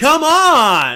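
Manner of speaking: put-on shrill, very high, loud shout, "on" stretched. Imitating actors complaining about their show, imitating a loud shout. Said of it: "That was very loud".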